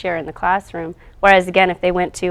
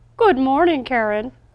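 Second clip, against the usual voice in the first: high put-on boy voice, puppet-like; 7 semitones higher than usual. Voicing a puppet in a recorded app demo: Joe voice. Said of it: "That does sound like Joe".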